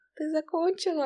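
thin little very high voice. A mother imitating her son after her evening lesson, in a thin voice. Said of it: "такая тонким голосом".

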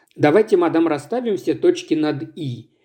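ordinary delivery

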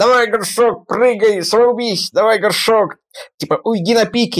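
high, insistent, demanding jester voice. Retelling a series scene where a jester appears to Gorshok: imitating the jester's demanding voice. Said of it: "он таким голосом разговаривает с ним".

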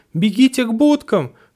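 very high, shrill, squeaky cry. He calls out to the narrator, squeaking. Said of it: "пискнул он".

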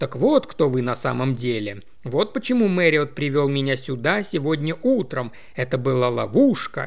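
ordinary delivery

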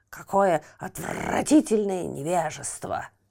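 furious, angry croaking voice. Narrator reading the toad's reply after the owl flies off, croaking in anger. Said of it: "У жабы от злости вздулись все бородавки".

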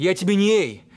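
usual speaking voice

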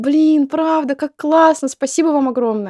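mock-happy, delighted voice. Speaker retells a woman's reaction to a present, retelling happy, delighted thanks. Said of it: "И она такая счастливая".

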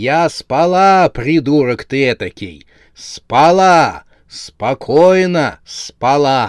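enraged, furious, drawn-out yelling. The wife, woken in the night by her husband, gives him an angry yell. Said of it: "она зло заорала".

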